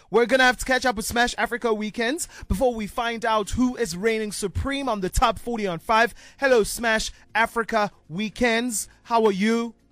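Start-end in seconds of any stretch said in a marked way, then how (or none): 6.3-9.7 robotic voice, slower. Radio host greeting a colleague on air: robot voice. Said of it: "Like a robot".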